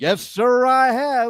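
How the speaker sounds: emphatic, swaggering cowboy-style delivery. Retelling a friend's reply to a cop: imitating an emphatic answer. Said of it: "he was so emphatic about it".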